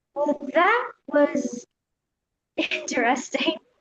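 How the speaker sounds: lightly bemused, wry, amused delivery. Retaking a line after the director asks for more humor, amused. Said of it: "a little bit more humor on that, like you're amused".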